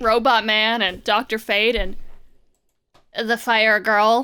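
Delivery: ordinary delivery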